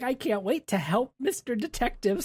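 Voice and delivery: high, tickled, eager, excited voice. Retelling a maid eager to help a detective: imitating an excited maid. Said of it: "She's excited".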